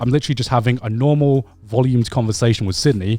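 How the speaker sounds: usual speaking voice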